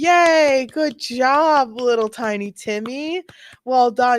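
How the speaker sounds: doting, loud, very slow cheering voice. Imitating family clapping for a kid's show: imitating family cheering a kid. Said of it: "Everyone's like".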